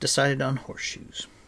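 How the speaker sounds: plain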